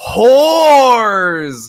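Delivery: very high, shrill, stretched-out scream. Recounting a movie scene, acting out Gary Oldman's entrance: imitating Gary Oldman screaming. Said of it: "he's just screaming like".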